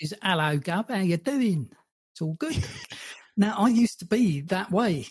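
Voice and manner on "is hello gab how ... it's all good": casual south-east London Cockney accent. Talking about London accents, showing how Cockneys speak: Cockney accent. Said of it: "you've got like your Cockneys".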